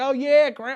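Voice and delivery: loud put-on Texas accent. Friends trying out accents, quoting people in a texas accent. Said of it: "Texas accent".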